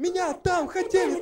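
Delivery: put-on shrill girl's yell, very loud and very high. Telling a joke where a girl bursts into a police station: acting out a girl shouting. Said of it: "ты не кричи".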